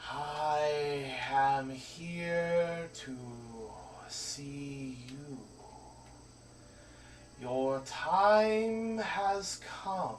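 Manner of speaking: spectral, otherworldly tone with "I" drawn out. Describing a figure who looks at you and speaks, hushed ghostly voice. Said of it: "in kind of like a hushed, uh, ghostly tone".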